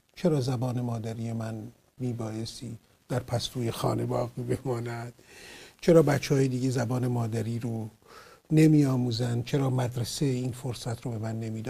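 ordinary talk

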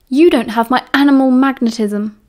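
ordinary delivery

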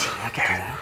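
unvoiced whisper.

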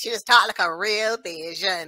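put-on Bajan accent. Showing how the speaker's auntie talks, in a Bajan accent. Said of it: "auntie just talk like this".

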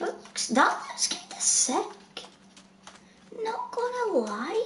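high, weird voice.

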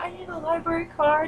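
hushed, soft, high stage whisper. Speaker recounts asking a woman at the library front desk, retelling half-whispering. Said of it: "I'm all whispering".

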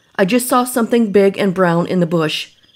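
usual speaking voice

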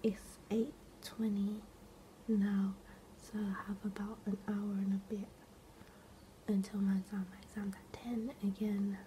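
hushed, quiet whisper. Giving an update before an exam while everyone is sleeping, whispering. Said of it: "I'm whispering because everyone's sleeping".

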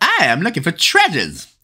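bad, cheesy, cartoonish put-on Canadian accent. Reminded of South Park by a word, terrible Terrance and Phillip accent. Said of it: "That was a terrible South Park Canadian accent".

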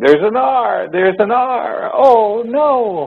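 very high agonized moan.

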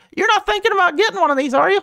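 squeaked out, very high pitch. Looking at a Maserati, voicing a line to a puzzled onlooker in Mickey Mouse voice impression. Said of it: "my mickey mouse voice impression".

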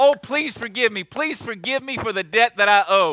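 put-on begging, pleading tone. Speaker retelling how a debtor begged the man he owed, acting out pleading. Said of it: "begged him, asked him, pleaded".

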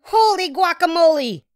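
sudden, loud exclaimed outburst. Reading a story aloud, a cat shooting past a mirror: exclaiming. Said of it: "exclaimed Skippy John Jones".

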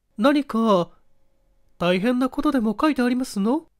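kind, soft tone. Reading a wife asking her husband a question: gently asking. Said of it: "妻が優しく聞いた".

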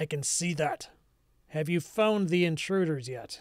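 authoritative, commanding voice. Game master voicing a lord who replies that guests have arrived, authoritative voice. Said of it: "a more authoritative sounding voice reply".

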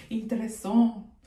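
put-on French accent. Telling viewers they found the video interesting, in a french accent. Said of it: "Let me say it in my French accent".

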